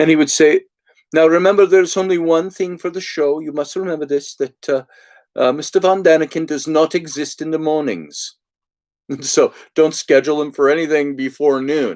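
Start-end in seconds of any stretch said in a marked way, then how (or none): 1.1-12.0 put-on Belgian accent. Retelling what an assistant told the organizers: imitating a Belgian accent. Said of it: "this Belgian accent or something like that".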